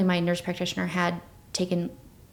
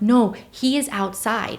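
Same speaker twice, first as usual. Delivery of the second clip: put-on frantic, desperate insistent tone, higher; 3 semitones higher, 4 dB louder than usual. Retelling an argument with her partner about their baby, retelling frantic insistence. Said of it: "And I'm like".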